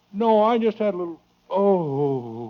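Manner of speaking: pained groan, drawn-out "oh". A father, asked if something is wrong, groaning as if dying. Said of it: "You sound like you're dying".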